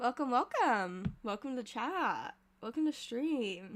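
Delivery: sleepy, groggy, freshly woken-up voice. A streamer welcomes chat right after waking up: just-woke-up voice. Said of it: "I kind of got that wake up voice".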